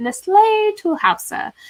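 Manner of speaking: put-on French accent, pitched way up. Retelling a story where Phoebe answers Monica, in Phoebe's French accent. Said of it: "in a French accent".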